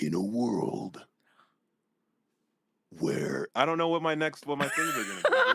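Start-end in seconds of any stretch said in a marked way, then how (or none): 0.0-3.5 loud, swooping, dramatic movie-trailer narrator voice. Asked to do it in their movie voice, the speaker performs in a movie voice. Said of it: "can you do it in your movie voice?".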